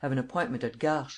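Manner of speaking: plain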